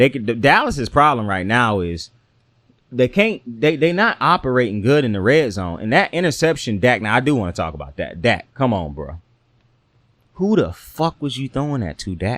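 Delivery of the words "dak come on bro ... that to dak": hushed, secretive, confiding half-whisper. Addressing the player who threw the interception: half-whispering. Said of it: "I'm whispering because I don't want to hear".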